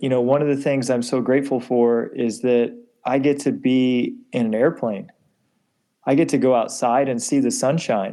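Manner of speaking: ordinary delivery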